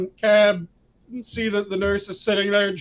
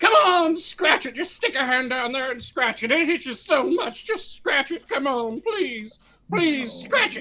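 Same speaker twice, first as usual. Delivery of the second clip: put-on old woman voice, much higher; 6 semitones higher than usual. Retelling what an old woman in a closing elevator kept saying, old woman's voice. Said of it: "this old woman yells".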